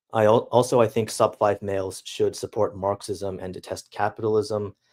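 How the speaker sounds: ordinary delivery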